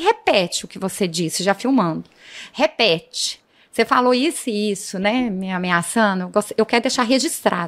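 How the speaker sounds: normal talking voice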